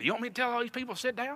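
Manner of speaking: put-on real, very high-pitched country accent. Speaker retells a pastor's question at an awkward wedding moment, in Benji's high-pitched country voice. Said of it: "real high pitched country voice".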